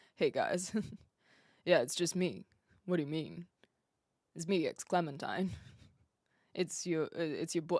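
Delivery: low, soft put-on voice. Thinking everyone takes her for someone else, she greets them in a much lower voice. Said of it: "if I could speak with a much lower voice".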